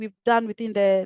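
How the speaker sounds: ordinary talk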